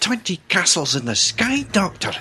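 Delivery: bad put-on Scottish accent. A fan quotes a line from the Cybermen story; bad Scots accent. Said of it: "That's just as bad".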